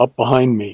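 plain reading voice

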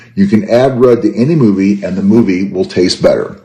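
ordinary talk

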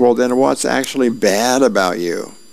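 plain reading voice

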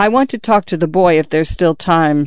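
plain reading voice

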